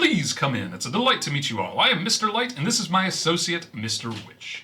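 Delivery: theatrical, flamboyant elf voice, high and swooping. Voicing an elf welcoming the party into the wagon: flamboyant elf voice. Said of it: "A flamboyant, uh, elf grins ear to ear".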